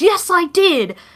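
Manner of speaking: dramatic, high, shrieking screamed yell. Retelling how Rai screamed in a voice message: imitating Rai screaming. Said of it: "he screamed at me in voice message".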